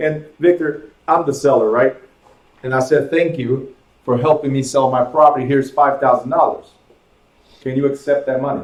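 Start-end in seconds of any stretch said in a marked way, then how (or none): none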